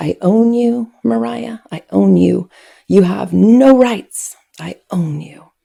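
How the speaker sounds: acted, furious, angry screaming tirade. Retelling a mother screaming while the speaker ran: imitating a mother screaming in anger. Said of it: "she's screaming at me at the top of her lungs".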